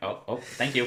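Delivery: bone-dry, deadpan little robot voice. Imitating the little droid from the film saying thanks: dry droid voice. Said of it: "He's like".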